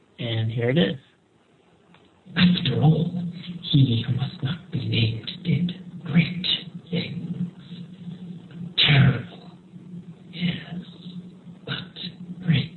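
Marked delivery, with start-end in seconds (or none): 2.4-12.8 slow, eerie, drawn-out creepy character voice. Quoting a movie line while imitating Ollivander. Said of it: "imitating is, uh, Ollivander".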